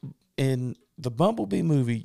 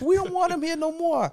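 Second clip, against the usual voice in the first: very high New York construction-worker voice; 4 dB louder than usual. Riffing on the same New York buildings getting rebuilt, in a New York construction guy voice. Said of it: "classic, like, New York construction guy".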